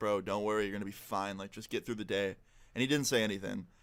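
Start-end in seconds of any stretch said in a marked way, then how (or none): 0.0-2.4 hushed half-whisper, under the breath. Retelling reassuring a classmate at their table: imitating own half-whisper. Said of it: "I whisper to him".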